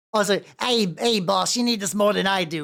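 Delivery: put-on goblin character voice. Speaking in character to the boss, in a goblin voice. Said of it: "I forgot that I was doing this voice for Goblin".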